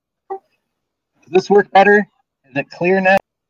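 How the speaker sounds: frustrated, spelling words out. Asking the others whether the audio is clearer now: frustrated. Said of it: "Don't sound so frustrated".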